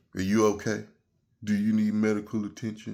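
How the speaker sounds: sarcastic, condescending, with fake concern. Retelling what a cop asked after being punched: imitating a sarcastic cop. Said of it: "very sarcastically".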